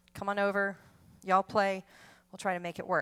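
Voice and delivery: ordinary talk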